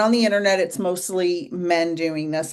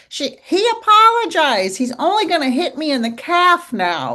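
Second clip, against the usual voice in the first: squeaky little comedian voice, high with bouncing, swooping tune; 10 semitones higher, 6 dB louder than usual. Quoting a comedian's stand-up bit about an abusive relationship: squeaky Joe Rogan voice. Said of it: "You know how he has a squeaky voice?".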